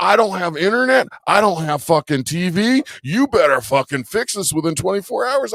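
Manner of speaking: acted furious ranting, high and livid yelling. Retelling what the neighbor shouted at the door: imitating a livid neighbor yelling. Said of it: "he was fucking livid".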